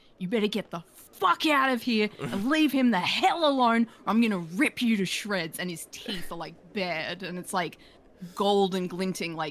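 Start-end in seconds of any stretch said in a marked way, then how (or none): 0.2-5.6 extremely loud shouting, higher pitch. Player voicing a dark tiefling warning someone off, extremely loud voice. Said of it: "He's gonna make his voice extremely loud".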